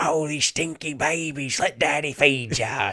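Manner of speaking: bad put-on Australian accent. Retelling a demon kangaroo boss's line from a book: bad Australian accent. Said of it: "giant demon kangaroo with a bad Australian accent".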